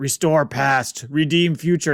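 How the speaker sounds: slow fake caveman voice. Recapping a show where a wolf speaks in short sentences: Doom Wolf caveman voice. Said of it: "It sounds like a caveman".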